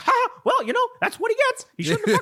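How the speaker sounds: squeaky, high cartoon mouse voice. Retelling a wrestling commentator's jokes in a Mickey Mouse voice. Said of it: "I'm doing Mickey Mouse for Jerry Lawler".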